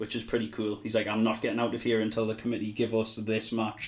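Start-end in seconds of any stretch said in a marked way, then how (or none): none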